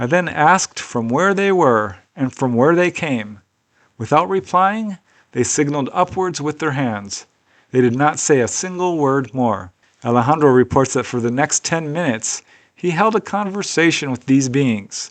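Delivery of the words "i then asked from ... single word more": usual speaking voice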